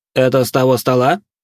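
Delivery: high-pitched, scornful, disdainful tone. Offered a tray by the narrator, a man asks a question; disdainful tone. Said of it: "спросил он таким тоном, будто ему предлагали какие-то объедки".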